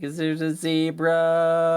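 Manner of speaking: put-on very high, very drawn-out sobbing child voice. Retelling how a child who woke up crying asked a question: imitating a crying child. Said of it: "and he's crying".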